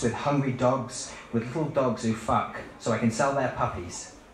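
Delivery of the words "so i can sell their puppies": normal talking voice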